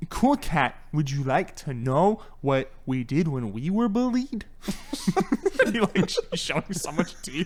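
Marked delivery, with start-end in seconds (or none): 0.1-4.4 slow, over-enunciated, theatrical actor delivery. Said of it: "trying so hard to enunciate".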